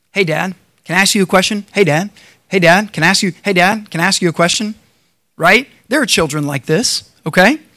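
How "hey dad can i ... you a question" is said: put-on nagging, pestering child voice. Acting out a child pulling on a parent's shirt at a meal, imitating a pestering child. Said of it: "They start pulling on your shirt".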